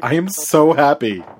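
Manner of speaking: genuine, earnest delivery. Repeating a remark that came out sarcastic, this time sincere. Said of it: "let me say that sincerely".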